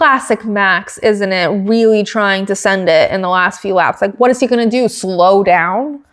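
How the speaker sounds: ordinary delivery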